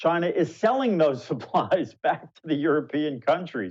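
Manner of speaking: laughing in disbelief.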